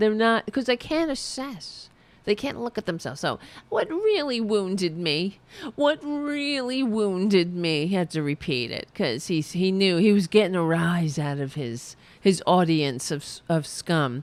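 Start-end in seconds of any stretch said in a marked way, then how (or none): 3.7-7.9 goading sarcastic tone, said twice. Reading out a quote from Alito: imitating Alito's sarcastic tone. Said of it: "Alito said in a sarcastic tone".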